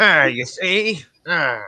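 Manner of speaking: put-on New York gangster voice. Greeting the audience and trying a bit, old-timey 1940s gangster accent. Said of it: "like nineteen forty fucking gangster".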